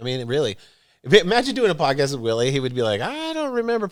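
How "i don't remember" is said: tiny, very high-pitched voice. Imagining doing a podcast with Willie, imitating Willie's little voice. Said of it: "and that little voice".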